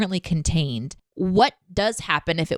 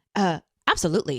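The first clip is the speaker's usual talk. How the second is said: put-on, self-assured character voice. Retelling a scene where Data answers another character, mock-confident Data impression. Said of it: "He was just so confident".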